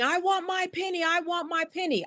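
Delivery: put-on high, insistent screamed complaint, repeated. Retelling a man in the store line: imitating a man screaming. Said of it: "he was screaming".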